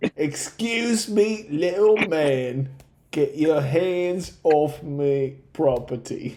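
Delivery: put-on Australian accent, droid-like voice. Voicing a droid who objects to being touched: put-on Australian accent. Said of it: "You're no longer Australian".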